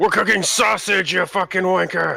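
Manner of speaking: put-on very high yelling orc voice with Scottish accent. Describing the scene to listeners, the speaker voices an orc shouting back, yelling orc voice. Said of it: "a different voice in Orcish yell".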